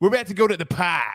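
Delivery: put-on, mock Boston accent. Acting out how someone else talks, in a boston accent.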